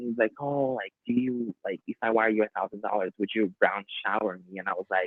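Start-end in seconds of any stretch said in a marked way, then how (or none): 0.4-4.6 soft, close, confiding hushed stage whisper. Retelling what a partner said during a hookup: imitating someone half-whispering. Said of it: "he just goes and whispers in my ears".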